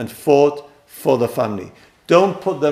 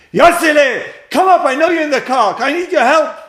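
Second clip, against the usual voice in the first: very high-pitched, shrill screeching scream; 13 semitones higher, 5 dB louder than usual. Retelling a joke where a wife screams from the window: imitating a wife screaming. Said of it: "starts screaming".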